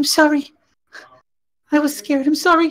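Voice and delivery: small, very high, timid little voice. Game narrator voicing a figure speaking to the player, small little voice. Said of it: "and a little voice says".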